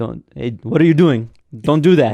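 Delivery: scolding yell in a very bad Indian accent. Retelling how their teacher yelled at a student, mock-yelling in a bad Indian accent. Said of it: "My apologies on my very bad accent".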